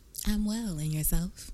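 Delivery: high put-on announcer-style intro voice. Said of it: "That was my intro voice".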